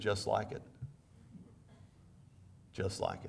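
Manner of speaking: mock sarcastic tone. Retelling a reply to a young man asking if war is like Xbox: retelling own sarcastic reply. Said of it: "looked at him with, you know, sarcasm".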